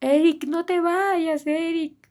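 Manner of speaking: very slow, high, stretched-out shout. A parent retelling how her son's siblings shouted his name, retelling a shout. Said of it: "Empiezan a gritar sus hermanos".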